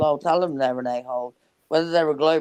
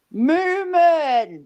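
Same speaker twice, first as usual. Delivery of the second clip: yelling, higher and louder; 13 semitones higher, 4 dB louder than usual. Calling out to someone on the call: screaming. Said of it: "what screaming?".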